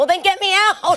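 piercing shriek, very high and very loud. Recounting her reaction when the president talked about her being in jail, retelling her scream. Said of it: "I literally screamed".

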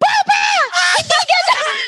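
very high, shouted, furious scolding shriek. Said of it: "Nagalit siya. Sabi niya".

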